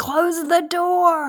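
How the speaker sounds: screaming, high and slow. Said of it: "Jim's screaming".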